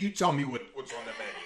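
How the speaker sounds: angry-sounding rant. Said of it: "That's for my father".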